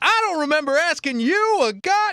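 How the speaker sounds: very high-pitched film star voice. Quoting a movie line to show his pitch: Samuel Jackson voice. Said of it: "it's the same pitch you get when he's like".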